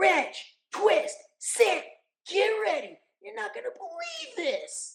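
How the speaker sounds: very high cartoon voice, pitch swooping way up. Speaker shows how they pitch up when talking as Otto, high-pitched Otto voice. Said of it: "it's up here".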